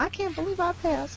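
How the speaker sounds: very high, slow, drawn-out southern drawl. Quoting Tammy's reaction to passing the exam: imitating Tammy's southern accent. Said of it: "I love her with her southern accent".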